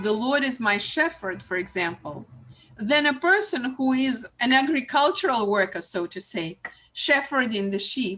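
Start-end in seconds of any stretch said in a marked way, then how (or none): none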